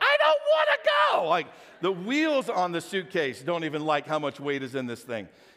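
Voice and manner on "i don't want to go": very high, loud, screaming screech. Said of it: "the wheels are screaming back at you".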